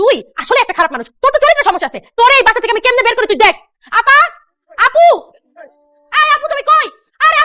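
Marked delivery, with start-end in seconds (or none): 4.0-7.4 screaming, yelling out, higher pitch. Calling out for her older sister from her room: screaming for someone. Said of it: "এভাবে চিৎকার করতেছিস কেন?".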